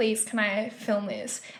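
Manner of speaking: put-on slow, drawn-out, begging plea. Retelling how a guy kept asking to film: imitating someone begging. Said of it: "begging me".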